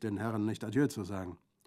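ordinary delivery

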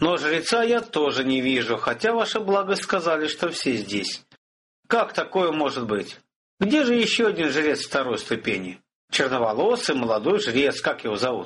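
plain reading voice

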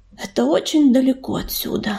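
ordinary delivery

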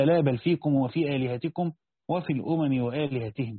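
ordinary talk, nothing marked

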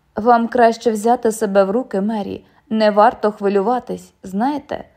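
ordinary delivery

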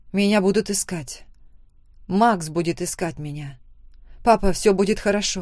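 plain reading voice

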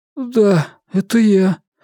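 oddly high-pitched, unusually high voice. Narrator reading a man's reply to two inquisitors, quiet, unusually high voice. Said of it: "тихим, необычайно высоким голосом отозвался он".

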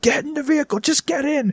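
mock shrill, high-pitched screaming. Recounting a sudden-death round, the speaker retells screaming at the other players. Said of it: "I'm screaming".

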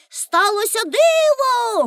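high calling out, word диво drawn out. After helping the others out of the boat onto shore, she calls out. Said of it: "гукнула Пеппі".

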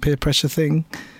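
ordinary delivery

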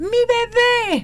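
put-on high, slow, stretched-out childlike shout. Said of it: "sino que gritaba".

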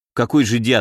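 plain

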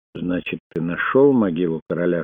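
ordinary talk

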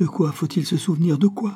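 halting, stuttering speech. Narrator reading a man holding an old man, mouth to his ear, stammering. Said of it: "la bouche contre son oreille balbutia".

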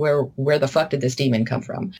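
ordinary delivery

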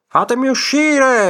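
shrill, very high, furious, enraged yell. Narrator reading a story, a man stuck inside a jar, yelling.

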